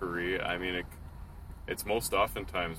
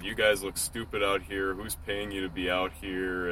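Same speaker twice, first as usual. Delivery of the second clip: ordinary delivery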